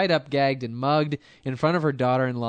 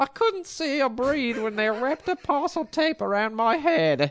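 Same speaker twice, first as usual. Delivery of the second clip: put-on very high, posh, queenly old-lady voice; 12 semitones higher than usual. Quoting a robbery victim from Bristol: Monty Python old-lady voice. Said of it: "You sound like the Queen".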